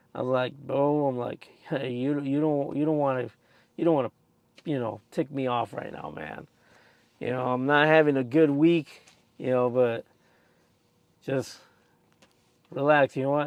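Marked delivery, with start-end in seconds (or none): none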